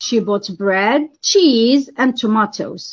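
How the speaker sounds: list tune rising on bread, cheese, falling on tomatoes. Listing example in an intonation lesson: rise on bread and cheese, fall on tomatoes. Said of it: "it's rising on, uh, I mean, all items, but falling on the last one".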